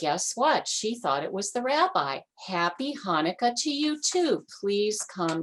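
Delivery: ordinary delivery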